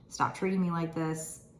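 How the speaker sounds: usual speaking voice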